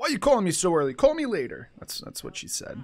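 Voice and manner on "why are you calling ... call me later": put-on sassy tone, high, loud, swooping, sing-song. Retelling what she said when someone called too early, in a put-on sassy tone. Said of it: "In a sassy tone".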